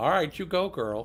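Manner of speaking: plain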